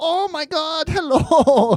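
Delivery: very high, very slow, drawn-out fake German accent. Imitating a comic's character who speaks in a put-on accent: put-on German accent.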